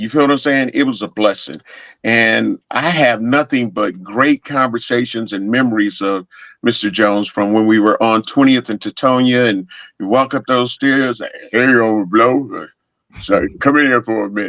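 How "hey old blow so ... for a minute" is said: casual, offhand, relaxed delivery. Retelling how Mister Jones called him in: imitating Mister Jones. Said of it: "You do a great impersonation of him".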